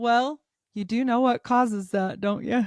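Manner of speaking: mock-cynical, put-on cynical delivery. Speaker retells her dad laughing at her and quoting his reply: retelling dad's cynical remark. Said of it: "cynical way".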